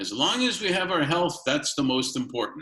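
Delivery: put-on Russian accent, Kyiv style. Speaker quotes the line their grandparents said most, in a Kiev Russian accent. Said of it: "with a Kiev Russian accent".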